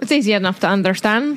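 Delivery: put-on butchered Scottish accent. Joking about a wizard sport's rules in a bad Scottish accent. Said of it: "I apologize to anybody with that kind of accent".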